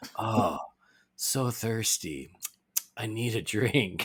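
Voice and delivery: very slow, long, stretched-out drawn-out delivery. Retelling a funny scene from the film: slow, drawn-out Trigon voice. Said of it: "this really slow, drawn-out joke of him just being like".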